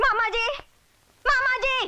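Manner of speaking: shouting. Calling for her uncle during a quarrel, shouting. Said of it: "इतना क्यों चिल्ला रही हो?".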